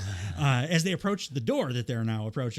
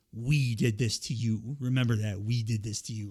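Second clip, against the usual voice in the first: mock, darkly menacing, threatening tone; 3 semitones lower than usual. Recounting a scene where one character threatens another, retelling a menacing line. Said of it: "very menacingly says".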